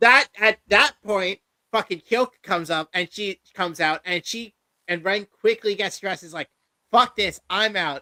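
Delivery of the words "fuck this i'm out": put-on angry temper tantrum, higher pitch. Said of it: "throws a temper tantrum".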